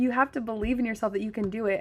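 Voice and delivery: ordinary delivery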